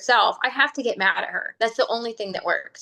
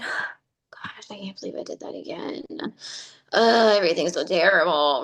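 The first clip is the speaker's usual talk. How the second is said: low, glum, sad voice; 5 semitones lower than usual. Describing how people talk to themselves, imitating sad self-talk. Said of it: "very like sad when we talk to ourselves".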